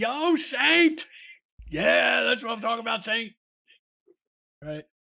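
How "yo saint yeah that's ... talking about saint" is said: put-on high, rowdy drunken scream from afar. Recounting people calling to him from across the way, retelling a drunk crowd's scream. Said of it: "you hear some people from across the way scream".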